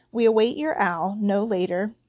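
ordinary delivery, nothing marked

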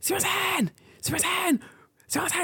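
mock old woman voice, very high, shrill repeated screeching. Retelling a video, the speaker imitates an old woman screaming at a man. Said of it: "screaming at this guy".

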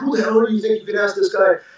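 fast, rattled-off, mild half-shout. Retelling how a man yelled at him before hanging up, imitating someone yelling. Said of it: "he's yelling at me".

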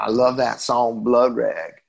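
put-on easygoing, relaxed Texas accent. Retelling what a man said over breakfast, in a Texas accent. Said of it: "he had like a Texas accent".

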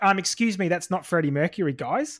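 ordinary talk

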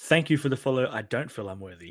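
ordinary delivery

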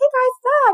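high, super happy, jittery voice.

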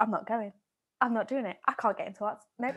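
speaking quietly. Recalling refusing her audition in a hotel with her dad: quietly, as her past self. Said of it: "I was really quiet".

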